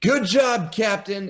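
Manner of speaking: very high, called-out shout. Voicing a character congratulating the captain after a kill: shouting. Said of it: "Miller shouts out".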